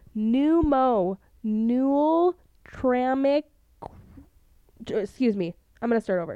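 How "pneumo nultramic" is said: really slow, drawn-out syllables. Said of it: "I'm gonna say this really slow".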